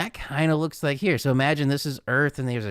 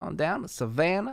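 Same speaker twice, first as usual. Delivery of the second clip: put-on Charleston, Georgia southern accent; 4 semitones higher, 5 dB quieter than usual. Joking after an accent slip, speaking in a put-on Charleston accent. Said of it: "like, Charleston accent".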